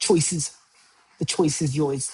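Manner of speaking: Boston accent put on over the words. Repeating a line after saying he'll throw in a Boston accent. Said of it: "Got to throw in a, a Boston accent".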